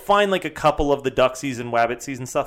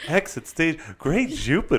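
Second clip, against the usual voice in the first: swooping cartoon-character voice; 3 semitones higher, 3 dB quieter than usual. Quoting a cartoon character's catchphrases: Snagglepuss voice. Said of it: "You do a good".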